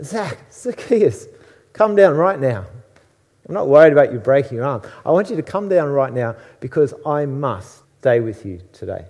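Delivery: put-on speech with laughter in the words. Retelling someone calling a man to come down right now, with put-on laughter in the voice. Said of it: "a bit of laughter in his voice".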